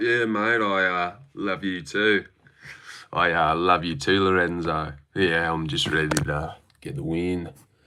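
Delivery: plain, halting, matter-of-fact voice with small pauses. Imitating JDM answering a question about his fight week: imitating JDM. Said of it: "He'd be like".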